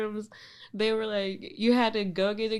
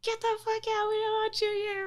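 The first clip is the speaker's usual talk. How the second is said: put-on high-pitched furious shouting; 13 semitones higher than usual. Describing a man yelling at someone who walked into a meeting, retelling a yell. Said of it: "somebody yells".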